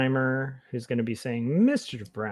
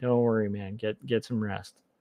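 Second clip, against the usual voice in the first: ordinary talk, nothing marked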